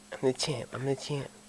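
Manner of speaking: hushed, very soft, breathy voice. Answering a question about talking with a lisp: Mike Tyson voice. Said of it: "Wait, Mike Tyson?".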